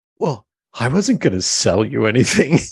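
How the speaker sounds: huffy, affronted, offended tone. Retelling a stranger's reply after being refused: imitating an offended reply. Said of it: "she comes back offended".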